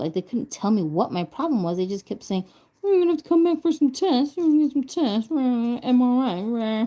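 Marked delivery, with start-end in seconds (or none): 2.8-6.8 high-pitched, silly voice. Retelling what the doctors kept saying after a stroke: imitating doctors in a silly voice. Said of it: "they didn't say it like that, but that's how I heard it".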